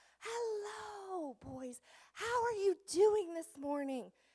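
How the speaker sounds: theatrical, showy, very high, dramatic, drawn-out delivery. Retelling greeting the boys as their new teacher, retelling a dramatic greeting. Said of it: "I'm a dramatic person, so I get pretty dramatic".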